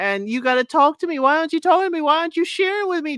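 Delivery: put-on pleading crying voice, high, rushed, weepy whine. Acting out Alicia after Oscar showed no interest in her, imitating a woman crying. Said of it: "Sound like a Brittany, crying".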